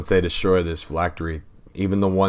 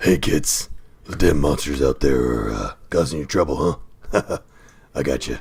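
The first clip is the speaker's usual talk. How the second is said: deliberately bad put-on superhero voice; 3 semitones lower than usual. Pitching how a character might greet kids before a fight: Batman-like voice. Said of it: "Sounds like Batman if he uh".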